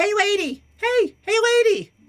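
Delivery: put-on young child's voice, calling out. Voicing young children calling to the party: young child's voice calling out. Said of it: "you hear a voice".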